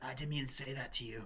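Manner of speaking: hushed, in-character, half-whispered aside. Half-whispering in character to Elgar in a roleplaying game: in-character half-whisper. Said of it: "and then I whisper".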